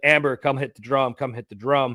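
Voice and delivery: ordinary talk, nothing marked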